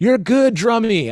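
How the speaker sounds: thick put-on Jamaican accent, very high and loud. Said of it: "full on thick Jamaican accent".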